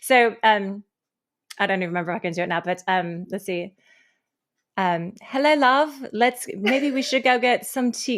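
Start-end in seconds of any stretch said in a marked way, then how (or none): 5.2-8.2 failed put-on British accent slipping into Australian. Trying an accent from an old audition, the speaker attempts a failed British accent. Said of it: "No, that was Australian".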